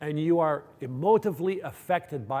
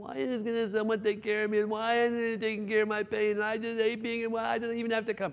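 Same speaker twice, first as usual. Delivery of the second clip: put-on high, tearful, complaining whine; 7 semitones higher than usual. Retelling a patient's complaint about her chest pain: imitating whining and crying. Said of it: "That's her tone".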